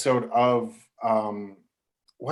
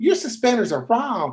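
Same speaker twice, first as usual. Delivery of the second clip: put-on very high-pitched voice with Southern accent; 10 semitones higher, 3 dB louder than usual. Retelling what Fred Berry said on set: Fred Berry's high Southern voice. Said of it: "He always sort of this high Southern voice".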